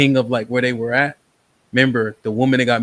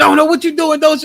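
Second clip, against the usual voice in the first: put-on shrill, very high, loud yelling; 5 dB louder than usual. Retelling a mom trying to stop her son from shooting: imitating a mom yelling. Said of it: "'Cause she yelling".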